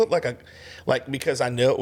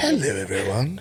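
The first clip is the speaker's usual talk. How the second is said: calm, warm, soothing recorded-narrator style woman's voice. Describing something you remember, put on that soothing lady's voice. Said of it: "that soothing lady's voice like".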